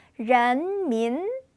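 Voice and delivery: ren and min each rising from low. Teaching the chinese word for the people: both syllables rising from low. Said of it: "아래서 두 번 올라가겠습니다".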